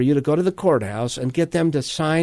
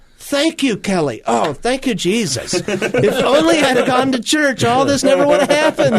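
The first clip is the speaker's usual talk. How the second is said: mocking sarcastic tone, pitched up; 11 semitones higher, 5 dB louder than usual. Retelling what they thought back then about a rule to attend church: retelling own sarcastic thought. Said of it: "going sarcastically in my brain".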